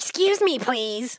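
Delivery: hissing cat-like snarl. Retelling a hurried woman the speaker was in the way of, retelling a snarl. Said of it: "she basically snarled at me".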